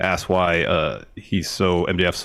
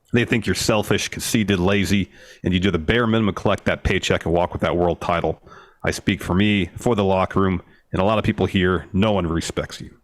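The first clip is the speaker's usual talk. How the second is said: ordinary delivery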